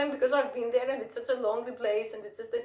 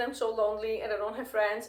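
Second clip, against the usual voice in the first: ordinary talk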